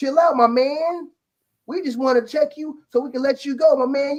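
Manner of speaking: put-on very high, patronising, soothing talk-down voice. Retelling how they were talked down to, mocking condescending tone. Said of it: "Stop trying to fucking talk like that".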